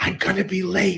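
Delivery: whispering. Retelling a phone call from an author on a book tour: imitating Robert Hicks whispering. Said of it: "he was whispering and he was like".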